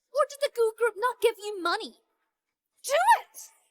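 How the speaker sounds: shouting. Ordering the others to hit them: shouting. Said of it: "Stop shouting".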